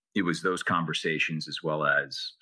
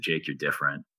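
normal talking voice

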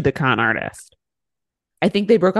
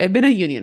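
normal talking voice

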